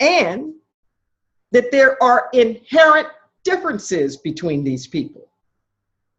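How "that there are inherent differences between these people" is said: inherent stressed and set apart. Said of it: "Emphasis on the word inherent".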